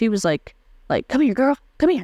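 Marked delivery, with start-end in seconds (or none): 1.1-2.0 high, coaxing call, as from far off. Retelling a catcaller calling out like to a dog: imitating calling a dog. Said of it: "like how you get a dog to, like, come to you".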